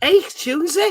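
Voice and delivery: put-on Scouse accent. Attempting a character's phrases while discussing accents, bad Liverpudlian accent. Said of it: "No, that's terrible".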